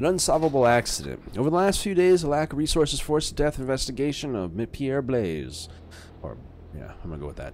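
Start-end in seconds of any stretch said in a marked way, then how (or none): 0.0-5.7 raised, formal newscaster read. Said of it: "That is my newscaster voice".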